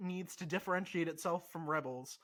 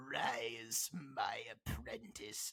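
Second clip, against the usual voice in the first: very low, evil emperor-style voice; 7 semitones lower, 9 dB quieter than usual. Imagining the last scene of the season: Palpatine voice. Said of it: "Palpatine's gonna be like".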